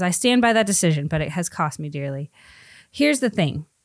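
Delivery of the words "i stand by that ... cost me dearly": ordinary delivery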